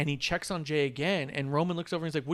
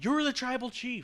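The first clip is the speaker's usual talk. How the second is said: put-on screamed delivery, higher pitch; 9 semitones higher than usual. Retelling a match scene, imitating Paul Heyman screaming at Roman. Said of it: "Paul Heyman starts screaming at Roman".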